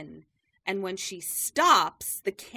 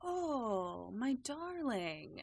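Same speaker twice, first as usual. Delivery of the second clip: mock honeyed, very sweet tone, lingering drawn-out "oh"; 4 semitones higher, 10 dB quieter than usual. Retelling how the teacher talks to the newcomer: imitating a sweet tone. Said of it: "very sweetly in that way".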